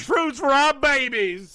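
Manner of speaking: put-on southern American accent.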